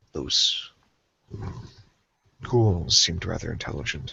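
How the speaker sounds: whispered, low, hushed, uneasy and fearful voice. Playing a character, speaking to a fellow player in the story: low voice. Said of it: "as I kind of say in a low voice".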